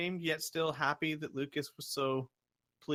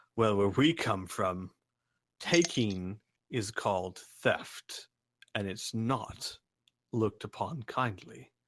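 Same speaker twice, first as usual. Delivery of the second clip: very low, deep, heavy-set giant's voice; 7 semitones lower than usual. Narrating a game, voicing one of the bigger giants in a deep booming giant voice. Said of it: "one of the bigger giants in a deep booming voice".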